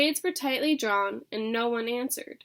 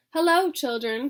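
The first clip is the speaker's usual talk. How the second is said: sweet, sweetly spoken voice; 3 semitones higher, 4 dB louder than usual. Narrator reading a character greeting the children, in a sweet voice. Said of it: "said in a sweet voice".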